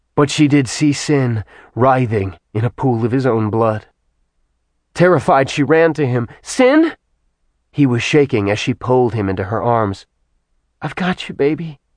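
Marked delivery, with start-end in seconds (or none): 10.8-11.8 soft, hushed half-whisper. A narrator reads a woman holding a wounded, shaking man in her arms: half-whispering. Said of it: "she whispered".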